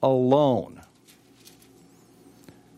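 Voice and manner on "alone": ALONE stressed, with a falling tune. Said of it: "Emphasis on the word alone".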